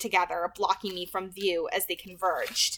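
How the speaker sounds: ordinary delivery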